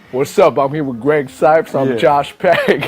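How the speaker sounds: put-on, low-register deep voice. Joining a co-guest's joke, introducing both guests: put-on low-register voice. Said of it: "you sound good like that".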